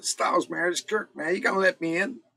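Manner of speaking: put-on American accent, pitched very high. Retelling the spoken intro of a tune, the speaker does a put-on American accent. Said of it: "the American accent".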